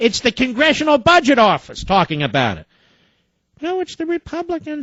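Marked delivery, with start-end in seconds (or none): 3.6-4.8 squeaky, very high and soft. Answering in an argument over the Congressional Budget Office and Republicans, in a Minnie Mouse voice. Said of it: "says Minnie Mouse".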